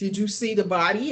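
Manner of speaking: normal talking voice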